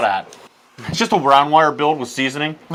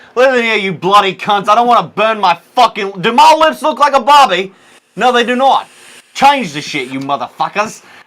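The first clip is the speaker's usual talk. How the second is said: loud, high put-on Australian accent, full-on ranting; 7 semitones higher, 7 dB louder than usual. Acting out an imagined man's complaint: put-on Australian accent. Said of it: "Where's that accent from?".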